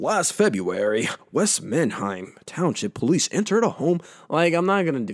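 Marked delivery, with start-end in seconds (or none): 0.0-4.0 broadcast newsreader announcer delivery. Speaker skipping a headline, briefly reading it in a news announcer voice. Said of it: "in my announcer voice".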